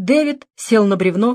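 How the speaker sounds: plain reading voice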